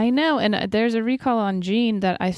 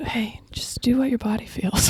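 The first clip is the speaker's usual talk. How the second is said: soft, breathy, airy whisper; 3 semitones higher than usual. Addressing the listener, repeating the advice, whispering. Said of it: "It's better if we whisper it too".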